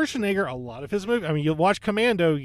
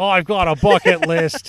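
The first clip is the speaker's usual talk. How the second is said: louder, put-on Australian accent; 8 dB louder than usual. Imitating an actor wanting to make action movies: failed Gerard Butler impression. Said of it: "I don't know why he's Australian".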